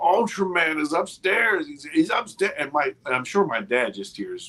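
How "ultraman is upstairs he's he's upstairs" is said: acted-out high yell at the top of lungs. Retelling what the speaker yelled to the parents: imitating own past shouting. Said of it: "I am saying at the top of my lungs".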